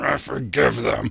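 spoken through clenched teeth. Illustrating how a listener might say they forgive, through clenched teeth. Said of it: "you might have clenched teeth going".

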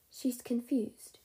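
frail, fragile, delicate voice. Answering Emery's question, speaking in a fragile voice. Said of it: "she said in her fragile voice".

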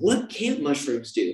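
play-acted, awed, marveling exclamation. Retelling going outside under a full moon after the mushrooms worked, retelling yelling at the moon. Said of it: "I'm like yelling at the moon".

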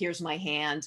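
ordinary delivery

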